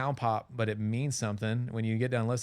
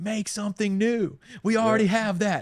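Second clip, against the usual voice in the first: screamed speech, higher and louder; 10 semitones higher, 7 dB louder than usual. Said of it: "screaming into his mic".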